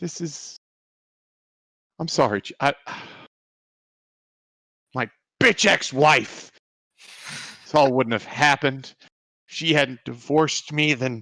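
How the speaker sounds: tearful, halting, on the verge of tears. Voicing a character whose eyes well up, apologizing to another character: tearful, on the verge of tears. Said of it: "his eyes are actually just starting to well up with, with tears".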